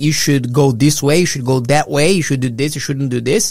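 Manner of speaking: ordinary talk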